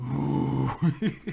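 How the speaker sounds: loud, creaky, growling voice.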